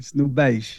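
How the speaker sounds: Portuguese-accented pronunciation. Showing the others how the town's name is said, in a portuguese accent. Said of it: "You gotta say it with the Portuguese accent".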